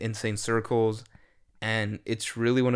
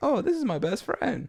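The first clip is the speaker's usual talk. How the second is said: very high, tiny first-grader voice; 11 semitones higher than usual. Explaining what they picture when thinking of a best friend, a first grader impersonation. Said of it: "That's my impersonation of a, of a first grader".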